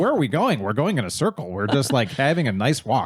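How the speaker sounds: ordinary delivery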